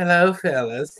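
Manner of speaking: tiny, strange little voice, not burly. Recalling a bearded actor from Cannonball Run, imitating his little odd voice. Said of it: "He had that little fucked up voice".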